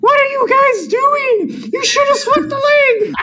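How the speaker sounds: squeaky, very high character voice. Asked for a preview of the Imperator: gingerbread man from Shrek voice. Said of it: "I need a preview".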